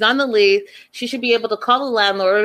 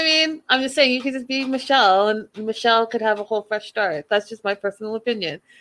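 ordinary delivery

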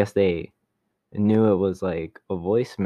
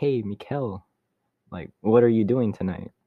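flat, robotic assistant voice. Retelling a repeat phone call where the caller spoke in the Siri voice. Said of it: "it was like the Siri voice again".

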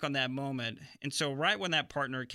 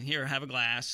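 plain

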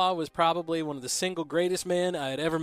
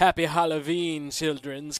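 put-on heavy German accent, slower. Speaker recalls a woman handing out halloween candy, in a heavy german accent. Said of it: "she spoke with a heavy German accent".

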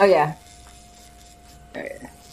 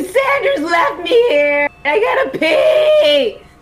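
high, slow fake sobbing wail. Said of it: "fake cry and just start crying".

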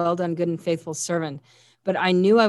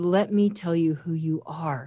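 slow, tender, loving half-whisper; 3 dB quieter than usual. Retelling words once half-whispered to the speaker: imitating a loving half-whisper. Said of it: "in the most loving voice I've ever heard in all my life, he whispered".

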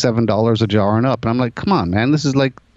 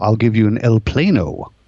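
mock, grand, fancy, showy vendor sales flourish. Retelling how the hot dog vendor made free hot dogs sound fancy: imitating John the Hot Dog Man, fancy-sounding. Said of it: "he would make it sound fancy".

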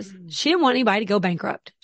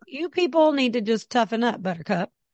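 ordinary talk, nothing marked

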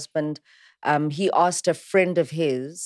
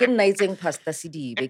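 ordinary delivery

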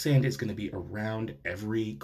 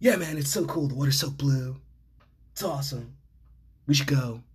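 easygoing, laid-back stoner dude voice; 4 semitones higher, 4 dB louder than usual. Imitating an old friend's invitation, in a stoner voice. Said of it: "He talked like that because a lot of my friends back in the day were stoners".

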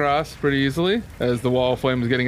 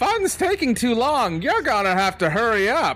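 shrill, very high screeching voice; 9 semitones higher than usual. Describing the scene to the players, voicing a voice that screeches out: screeching voice. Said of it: "a voice that's going to screech out like".

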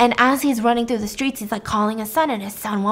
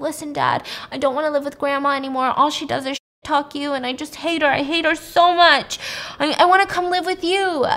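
put-on sobbing child voice, higher; 4 semitones higher than usual. Retelling a son's call to his dad: imitating a crying son. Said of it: "his son is, like, crying".

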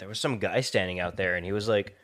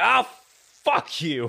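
loud, high, shrill put-on screaming outburst; 9 semitones higher, 5 dB louder than usual. Describing a movie scene, the speaker acts out a character's scream at a cop, retelling a scream. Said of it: "he just starts screaming at the cop".

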